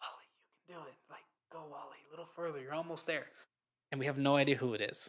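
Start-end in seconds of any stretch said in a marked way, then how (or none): 0.0-3.3 almost whispered, very quiet, faint and far-off. Retelling a faint background voice cheering someone on: imitating a faint almost-whisper. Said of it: "a little faint voice that's almost whispering".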